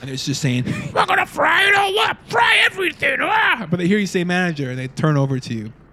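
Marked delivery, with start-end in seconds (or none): 0.7-3.7 squeaky, very high, goofy silly voice. Describing things thrown into the fryer, then voicing the fryer; odd put-on voice. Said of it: "I don't know why I talk like this".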